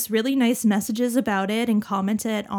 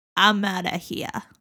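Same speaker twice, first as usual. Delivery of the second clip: put-on New York accent. Voicing what he said about leaving, in a new york accent. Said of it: "That was a more New York accent".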